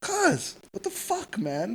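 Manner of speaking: acted very high, swooping, exasperated calling out. Retelling calling out a passerby at the expo: retelling calling someone out. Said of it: "I put up my hands like".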